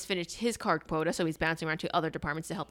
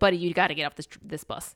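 normal talking voice

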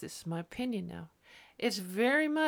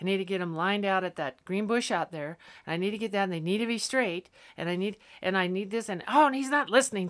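ordinary delivery

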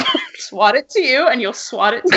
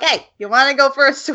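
put-on Boston accent. Retelling what a kid named Charlie said to him, in a Boston accent. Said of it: "went from like Australian to, I don't even know, Boston".

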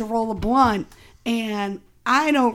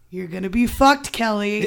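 ordinary talk, nothing marked

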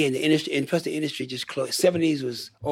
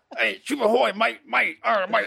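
mock pirate talk, higher pitch; 8 semitones higher than usual. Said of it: "I went like".

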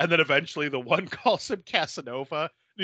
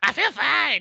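very high, cartoonish teen girl voice; 10 semitones higher than usual. Retelling what an escaped nursing-home resident said, Strong Bad's Teen Girl Squad voice. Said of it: "she reminded me of Strong Bad doing the Teen Girl Squad voices".

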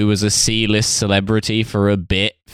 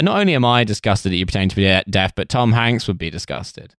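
plain

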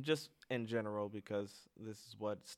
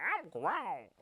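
very high, loud voice; 10 semitones higher, 6 dB louder than usual. Imitating a friend's claim to be grown up: Bailey impression. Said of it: "That's my impression of Bailey".

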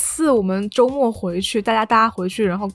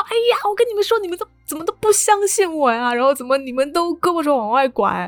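imitated anxious, angry old man voice; 6 semitones higher than usual. Retelling how an old man complained to family: imitating an anxious, angry grandpa. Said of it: "他就很着急，很生气".

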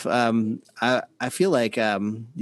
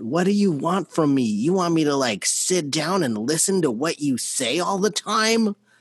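mock yelling, pitched up high; 6 semitones higher than usual. Recounting what he yelled after you carried him to his room, retelling his yell. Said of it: "he was yelling at me".

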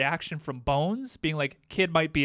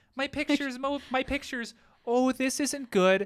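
put-on high, childlike voice of a small boy; 9 semitones higher than usual. Recounting a film scene, voicing the boy who lost his photo strip, in a little boy voice. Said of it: "And his little boy voice".

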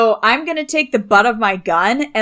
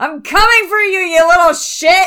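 high hollering yell, carrying into the distance; 9 semitones higher, 3 dB louder than usual. Speaking to Constance, the character turns and yells after Tinsel: yelling. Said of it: "I'm going to yell after Tinsel".

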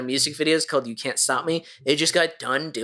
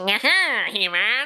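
put-on cartoon villain voice, higher pitch; 8 semitones higher than usual. Showing how the eighties Skeletor sounded: old eighties Skeletor voice. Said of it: "that old eighties Skeletor".

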